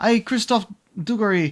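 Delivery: ordinary delivery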